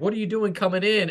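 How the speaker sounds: shouting across. Recounting leaving the gate as a tank came in, the speaker retells yelling at it. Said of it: "I'm like yelling at the tank".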